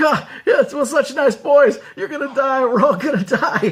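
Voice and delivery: put-on old man voice, laughing. Retelling what a man at the movie said: imitating a man laughing while talking. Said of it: "And he's laughing".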